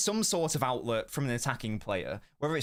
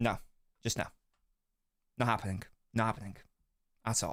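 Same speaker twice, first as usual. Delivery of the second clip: emotional, a bit choked up, voice catching; 3 semitones lower, 3 dB quieter than usual. Rejecting the suggestion of selling him, choked up. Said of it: "Getting a bit choked up there".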